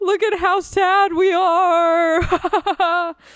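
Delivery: mock sobbing tipping into high laughter. Retelling turning to their mom while crying, imitating laugh-crying. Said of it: "So I'm like sobbing".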